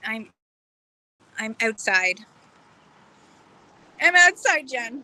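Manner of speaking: hiccuping while speaking. Talking to someone on a call, talking with hiccups. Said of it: "I got the hiccups now".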